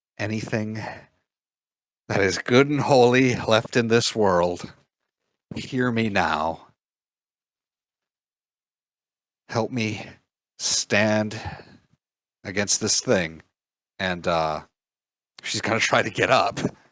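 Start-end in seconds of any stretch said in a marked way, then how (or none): 0.2-13.4 hushed whisper. Lillian, unable to get up, calls out for help, whispering. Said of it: "she whispers".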